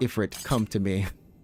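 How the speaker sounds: slow, deliberate, every word drawn out. Retelling a game line the voice actor delivered: imitating Ben Starr. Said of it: "it sounded like he was like".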